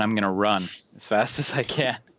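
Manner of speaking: usual speaking voice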